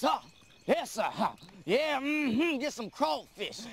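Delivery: mocking, put-on local way of talking. Speaker shows how they all talk, in a mocking put-on way of talking. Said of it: "We all talk like this".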